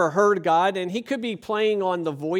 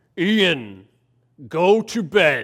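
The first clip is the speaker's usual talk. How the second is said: put-on deepest voice, very slow and drawn out; 5 dB louder than usual. Retelling how someone answered a question, putting on his deepest voice. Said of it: "he tries to get in his deepest voice".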